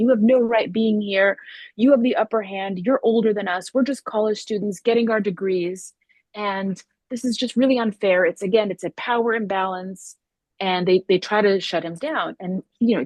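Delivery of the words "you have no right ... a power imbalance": angry, heated, worked-up venting voice. Retelling what angry college students shouted at a speaker: imitating angry shouting students. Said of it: "very angry college students who kinda shouted at him".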